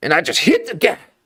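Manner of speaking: very high, mouth half blocked, as if gagged by a bit. Showing how Michael Biehn talks: Michael Biehn voice. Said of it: "'cause he just kinda talks like this".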